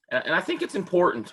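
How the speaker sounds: high, breaking, cracking voice. Mid-conversation, the speaker's voice unexpectedly breaks: voice cracking. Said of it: "my voice just cracked".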